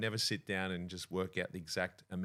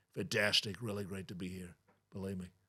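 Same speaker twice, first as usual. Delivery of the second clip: put-on brash politician impression voice. Former radio impressionist talking about his voices, doing his Donald Trump impression. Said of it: "I sort of did him".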